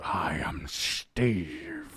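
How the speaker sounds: put-on rough, gravelly voice, dropped low. Suggesting a voice for the kraken character: gravelly Steve the Kraken voice. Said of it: "You're gonna make it a gravelly".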